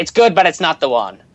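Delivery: put-on Irish accent, high-pitched. Searching for a word, the speaker says a line in a put-on Irish accent. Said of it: "that's my Irish accent for you there".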